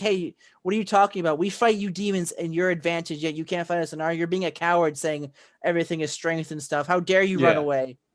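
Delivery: plain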